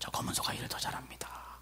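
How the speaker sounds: secretive, very quiet, barely voiced hushed whisper. Retelling a farmer answering the minister's question, whispering. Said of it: "속닥속닥".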